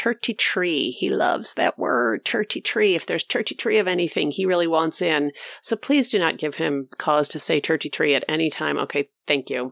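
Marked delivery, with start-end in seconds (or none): 0.0-0.9 imitated Irish accent. Showing how the speaker's husband now says the number, in an irish accent. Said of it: "says the word 33 with an Irish accent".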